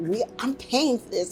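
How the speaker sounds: mock upset male voice. Retelling how a man complained during a campaign taping, mimicking him upset. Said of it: "he was all upset".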